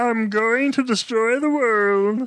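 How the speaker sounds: very high-pitched cartoon Martian alien voice. Listener, reacting to a Marvin reference, quotes the character in a Marvin the Martian voice. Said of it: "Marvin the Martian".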